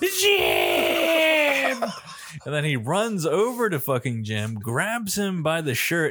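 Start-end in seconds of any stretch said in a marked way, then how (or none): 0.0-1.8 mock very high, loud, swooping scream. Telling a story where Mark hears it happen and calls to Jim, imitating Mark screaming. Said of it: "He starts screaming".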